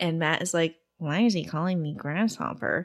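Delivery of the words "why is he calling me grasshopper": put-on boy's voice, quieter. Retelling a TV episode scene, doing a Matt impression. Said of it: "That's a good Matt impression".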